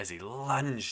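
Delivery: plain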